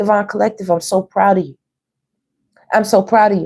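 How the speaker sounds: a little choked up, voice catching. Speaking to the group they are proud of, choked up. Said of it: "I just got choked up a little".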